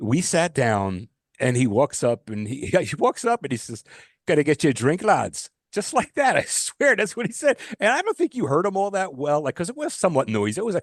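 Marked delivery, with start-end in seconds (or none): 4.3-5.5 put-on Irish accent. Retelling what the Irish pub's bartender said on walking up, in an Irish accent. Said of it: "the bartender had an Irish accent".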